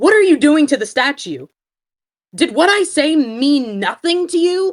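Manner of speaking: high, loud, crackling, tear-cracked outburst. Voicing a character who hasn't raised her voice in a year, raised and crackling. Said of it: "first time Zoe has raised her voice".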